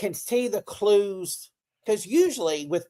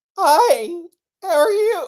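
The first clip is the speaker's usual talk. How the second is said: put-on very high, loud, squeaky teenage puberty voice; 11 semitones higher, 8 dB louder than usual. Explaining how the voice used to sound during puberty, mimicking own puberty voice. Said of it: "went through puberty".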